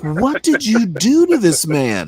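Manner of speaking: tearful, crying with laughter. Retelling what the X O asked in the officer's mess: imitating someone crying with laughter. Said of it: "The X O was crying, laughing".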